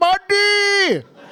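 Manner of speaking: mock overjoyed, very high, loud, buddy drawn out. Speaker recounts a waiter who kept calling the speaker buddy, imitating an overexcited greeting. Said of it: "Like he hasn't seen me in 10 years".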